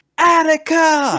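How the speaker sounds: very high, slow, drawn-out yell.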